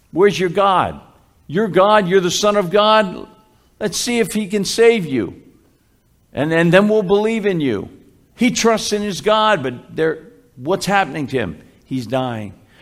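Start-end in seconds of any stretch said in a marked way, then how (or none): 0.2-7.9 mock, scornful, taunting heckling jeer. Speaker retelling what the people at the cross yelled, acted-out mocking yell. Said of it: "these people at the bottom of the cross are yelling this".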